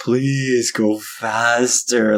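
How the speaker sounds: play-acted, imploring, begging tone. Retelling being stuck behind a slow minivan: acting out own pleading. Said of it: "pleading with them".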